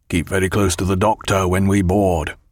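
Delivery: speaking low. Jack takes Bondon by the arm and speaks to him in a low voice. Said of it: "said in a low voice".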